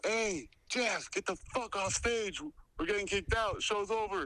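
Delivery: high-pitched, loud shouted yell. Retelling how someone yelled from the back to the comedian: imitating someone yelling. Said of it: "he yells out from the back".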